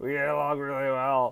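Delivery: put-on insincere earnest tone. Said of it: "say it like you mean it".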